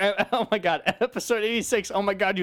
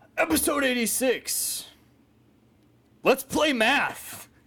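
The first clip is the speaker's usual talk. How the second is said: slow, pitched-up, dramatic ring announcer call; 5 semitones higher than usual. Reading episode titles after being asked for a wrestling announcer voice. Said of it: "You gotta read 'em all dramatic".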